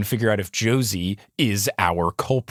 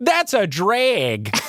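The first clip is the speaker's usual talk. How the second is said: put-on very high, drawn-out Canadian accent; 10 semitones higher than usual. Quoting a character's line while recapping an episode: Canadian accent. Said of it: "plus Canada accent".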